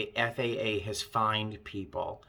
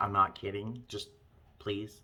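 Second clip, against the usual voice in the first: put-on half-joking but firm tone, quieter; 6 dB quieter than usual. Retelling a warning to passengers: retelling a half-joking but firm plea. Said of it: "but also with that tone".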